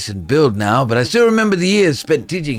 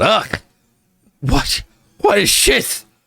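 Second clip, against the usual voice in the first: heavy slur, slow, pitched up, words run together; 8 semitones higher than usual. Narrator reading a story, a man spitting out the almonds he's given, slurring. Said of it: "He slurs at you".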